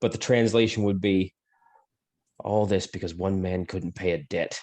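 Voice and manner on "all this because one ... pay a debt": muttered almost under the breath, quieter. A character mutters to himself, still loud enough for everyone to hear. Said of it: "almost under his breath".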